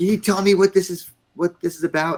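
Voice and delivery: shrill yelling, pitched very high. Retelling how he slammed the door and questioned the speaker, imitating someone yelling. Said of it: "And he's yelling".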